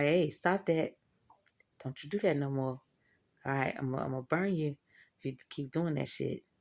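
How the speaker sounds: speaking in a devil character voice. Acting out the devil warning people to stop: voicing the devil. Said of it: "the devil be like".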